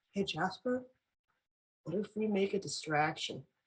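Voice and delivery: very quiet, slow, hushed whisper. Speaking in character, proposing a distraction to Jasper: whispering in character. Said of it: "and then whispers to Jasper".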